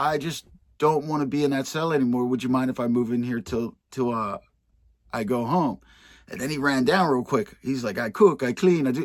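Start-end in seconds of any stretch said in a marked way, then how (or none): 8.0-9.1 put-on Jamaican accent, louder, higher. Retelling a man asking to move into his cell, imitating a jamaican accent. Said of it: "but he was Jamaican".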